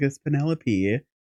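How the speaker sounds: ordinary talk, nothing marked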